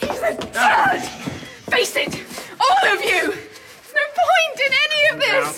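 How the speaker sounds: hysterical shouting and screaming. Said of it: "Calm down, calm down".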